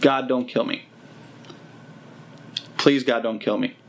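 mock bawling and crying in a pleading tone. Retelling the prayer the speaker said while bawling, reenacting bawling pleas. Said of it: "I started bawling my eyes out".

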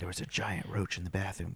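put-on whisper. Retelling what a wife said after her shower: imitating a whisper. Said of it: "she's whispering to me".

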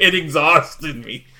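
sarcastic tone. Explaining a joke just made by repeating it: retelling a sarcastic line. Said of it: "Very sarcastic".

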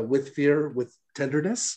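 usual speaking voice

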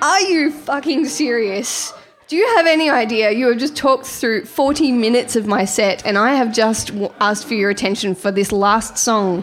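fed-up, furious, snapping angry outburst. A performer retells snapping at an audience member who talked through her set, retelling snapping. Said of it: "Totally snapped and just went".

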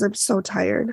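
whispered speech. Retelling what a frightened woman said: imitating a whisper. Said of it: "she just whispers".

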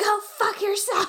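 play-acted very high, shrill screaming. Describing office coworkers on the phone, imitating someone screaming. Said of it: "on the phone screaming and be like".

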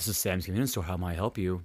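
tough-sounding, low, soft, deliberately deepened voice. Demonstrating their greeting at Sam's Convenience Store, lowered deeper voice. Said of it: "me lowering it to be like".

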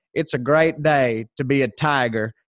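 exaggerated, really bad Southern American accent, drawn out. Imitating what a man said, really bad Southern accent. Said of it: "that's a really bad Southern accent, but that's pretty much what he sounded like".

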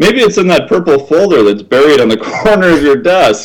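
snarky, needling sarcastic tone. Retelling what he said to a man behind piles of papers, retelling a sarcastic remark. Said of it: "I sarcastically said".

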